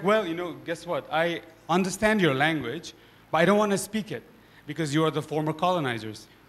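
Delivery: ordinary talk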